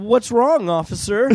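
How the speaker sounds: timid, polite, faintly frightened tone.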